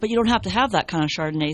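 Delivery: ordinary talk, nothing marked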